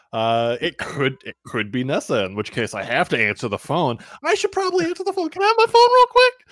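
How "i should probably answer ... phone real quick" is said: much higher, louder, nervous voice. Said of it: "I don't know why my voice is getting higher".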